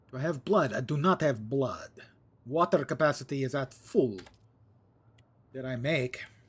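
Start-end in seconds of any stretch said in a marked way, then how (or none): 0.1-4.1 deliberately bad, put-on Transylvanian accent. Talking about leveling up characters, he breaks into a bad Transylvanian accent. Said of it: "I break into my bad Transylvanian accent".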